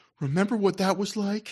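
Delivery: acted earnest, sincere tone. Quoting a man whose voice made the speaker laugh, imitating an earnest voice. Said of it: "he gives this very earnest voice".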